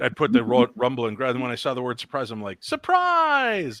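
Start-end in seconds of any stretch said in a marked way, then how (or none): 2.6-3.8 mock emphatic, very high, energetic shouted burst. Retelling how a word was recorded for a ghost device: energetic emphatic shout. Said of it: "emphasis and energy on some words".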